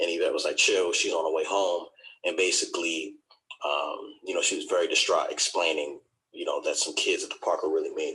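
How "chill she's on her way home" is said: ordinary talk, nothing marked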